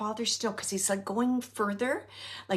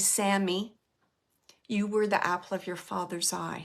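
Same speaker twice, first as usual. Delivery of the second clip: put-on near whisper, lower pitch; 3 semitones lower than usual. Relaying a message as it was almost whispered: imitating an almost-whisper. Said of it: "almost whispering to me, and he's saying".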